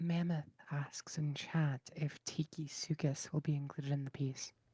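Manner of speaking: soft asmr-like voice. Co-host reads a viewer's chat question aloud, soft ASMR voice. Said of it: "apologize for the accidental A S M R voice".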